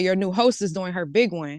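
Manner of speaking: usual speaking voice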